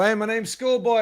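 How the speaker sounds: overacted theatrical line reading. Recalling his own stiff, exaggerated greeting when introducing himself on camera; imitating hammy line delivery. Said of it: "any more ham and we'd have a sandwich".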